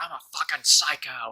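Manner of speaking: play-acted yell, kept mild, small and contained. Retelling how a streamer screamed after killing a whole squad: imitating someone screaming. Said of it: "He just screamed".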